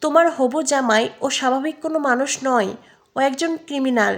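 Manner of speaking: ordinary delivery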